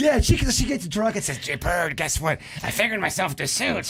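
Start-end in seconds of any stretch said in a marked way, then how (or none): 1.4-3.9 put-on Mexican accent, much lower, quieter. Friends imagining a drunk woman's announcement, acting it out in a put-on Mexican accent. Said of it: "still using that Mexican accent".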